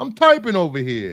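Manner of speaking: put-on New Jersey accent. Quoting Bruce's remark: imitating Bruce in a Jersey accent. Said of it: "in his Jersey accent".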